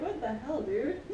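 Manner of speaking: normal talking voice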